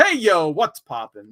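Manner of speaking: unhurried, slow, drawn-out, stretched-out drawl. Reading a chat viewer's greeting aloud: Chad impression. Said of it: "best Chad impression there".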